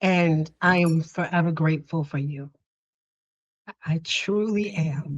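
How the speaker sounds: choked-up voice, near tears throughout. Telling the listener that everything started with them, trying not to cry. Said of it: "I'm like trying not to cry".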